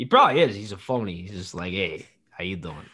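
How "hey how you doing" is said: put-on Italian accent, quieter. Mocking someone as a phony, put-on Italian voice. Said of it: "Italian's my default voice".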